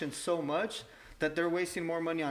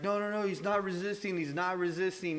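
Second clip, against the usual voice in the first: put-on desperate, frightened, frantic, panicked pleading voice. Retelling a mother's words as police kneel on her son: imitating a panicked mother. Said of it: "you could hear the mom freaking out".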